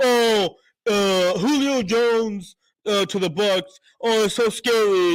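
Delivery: very slow, drawn-out, mocking, sarcastic sneer. Making fun of people who call the trade scary: mocking imitation of critics. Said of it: "I'm making fun of every fucking ass clown that sits there and says".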